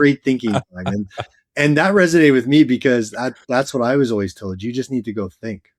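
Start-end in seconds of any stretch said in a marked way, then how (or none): 0.0-0.6 put-on crotchety, grumpy old man grumble. Imitating an audiobook's narrator giving advice: imitating a grumpy old man. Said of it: "He sounds like a very grumpy old man".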